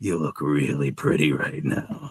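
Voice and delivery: creepy, breathy, whispered murmur. Suggesting how a character could come up and be creepy, in a creepy voice. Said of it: "be really creepy".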